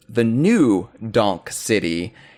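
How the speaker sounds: heavy stress placed on "new". Discussing the name New Donk City, with stress on new. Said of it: "you have to put the emphasis on new".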